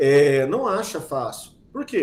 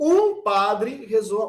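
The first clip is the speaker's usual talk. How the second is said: stressed um, drawn out slowly. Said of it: "Ou se eu falo assim".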